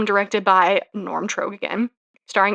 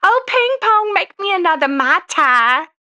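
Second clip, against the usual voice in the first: put-on very high, slow, thick Southern accent; 10 semitones higher, 4 dB louder than usual. Retelling a film scene, imitating Angela Lansbury: thick Southern accent. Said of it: "Angela Lansbury has a thick Southern accent".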